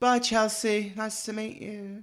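very high voice fading and trailing off. Retelling the end of a fan meeting scene: Rochelle's voice trailing off. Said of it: "Rochelle's voice trailing off into the wind".

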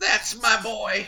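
strained, very high voice, forced out. Recapping a movie scene, the host quotes Mr. Grant's reply, imitating his strained voice. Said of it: "through a strained voice".

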